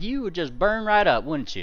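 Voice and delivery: put-on rural country farmer accent. Voicing a farmer from hell answering a question: country farmer accent. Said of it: "still with the same accent".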